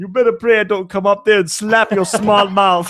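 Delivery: put-on over-the-top Louisiana backwoods accent. Playing a psychic addressing someone from Connecticut: backwoods Louisiana psychic lady voice. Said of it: "talk like she was some like backwoods Louisiana psychic lady".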